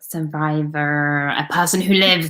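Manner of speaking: American-sounding voice. Reading a vocabulary definition aloud while practicing, in an american accent. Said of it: "You said that like an American".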